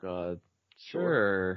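low, unexcited, with "sure" drawn out. Asked if the group wants to hear about another speaker's dream, replying unexcited. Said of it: "Why don't you sound excited?".

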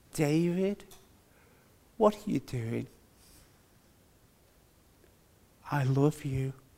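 hushed, very quiet, soft, gentle voice. Retelling the moment he heard God speak to him, very quiet voice. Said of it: "He said in a very quiet voice".

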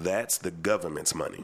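slow, low, every word deliberately drawn out. Emphasizing a point to the others in the conversation, saying it real slow. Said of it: "Let me say this real slow".

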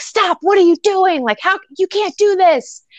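play-acted freaked-out outburst in a very high voice. Retelling a movie scene, the younger brother stops a shooting, retelling someone freaking out. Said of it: "He's freaking out".

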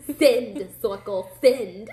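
put-on mimicked New Jersey accent. Describing a character playing a virtual game, mimicking his catchphrase: New Jersey accent. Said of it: "with his New Jersey accent".

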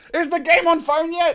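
high, loud yelling.

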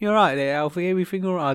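attempted Birmingham accent. Saying the Birmingham way of talking is rubbing off, the speaker tries an attempted Brummie accent. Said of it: "I don't know bram accent".

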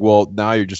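usual speaking voice

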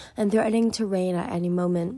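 ordinary delivery, nothing marked

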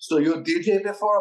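heavy put-on Persian accent, loud and slow. Retelling what the Persian manager asked at a DJ training night, thick Persian accent. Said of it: "He's got like a very thick accent".

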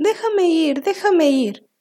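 high-pitched, drawn-out squealing cry. Narrator reading a piglet's plea as a fox drags it inside, squealing. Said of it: "El cerdito pataleaba y chillaba".

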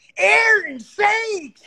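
very high-pitched, loud hollering yell. Retelling a friend yelling as stage lights came up: imitating Eric yelling. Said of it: "Eric yells out".

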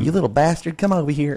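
high, put-on Texan mom voice, Texan accent. Speaker quotes their mom, who was real Texan, in her accent. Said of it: "she's real Texan".

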